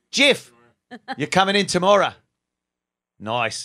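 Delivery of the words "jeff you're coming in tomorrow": fake Australian accent, higher and louder. Inviting a guest onto the show: put-on Australian accent. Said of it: "all of a sudden I turned Australian".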